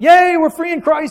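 play-acted, high, carefree, gleeful happy whoop. Discussing the sin going on in Corinth, mimicking the Corinthians in a mock-happy cheer. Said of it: "And you're all happy".

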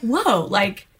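ordinary talk

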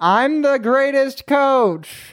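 shouting. Speaker recapping a TV episode's failed jokes, imitating Nick Offerman yelling.

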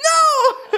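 very high, stretched-out, drawn-out shrieking scream. Refusing another speaker's request to move something: screaming. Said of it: "I did not mean to scream at you".

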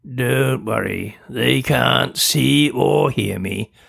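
gruff, rough delivery. A narrator reads a creature speaking to a girl: gruff. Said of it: "it said gruffly".

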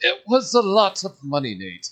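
bad put-on Irish lilt, high and swooping. Retelling what a man told him at dinner months later, in a terrible Irish accent. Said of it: "Terrible Irish accent".

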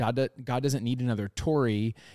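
plain

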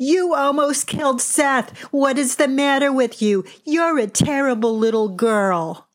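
high, play-acted New York accent, hollered, scolding tone. Retelling a poolside scolding, imitating Missus Kleinberg shouting in New York accent. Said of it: "in her loud floral one-piece and New York accent, she shouted".

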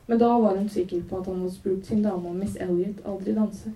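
ordinary delivery

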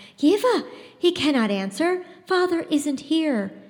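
high, slow voice choked with fear. Lena draws yeva back from the dog, voice choked with fear. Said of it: "her voice choked with fear".

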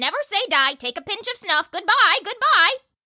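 very high, squalling parrot voice. The narrator reads the old lady's parrot Polly calling out from her perch, squalling parrot voice. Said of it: "squalled Polly".

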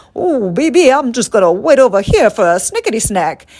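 folksy Southern gentleman voice with a drawl. Describing her old cooking show, the host voices her sidekick Kokomo: Colonel Sanders voice. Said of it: "We gave her a voice like Colonel Sanders".

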